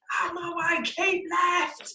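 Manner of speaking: loud shout. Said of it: "the woman that shouts".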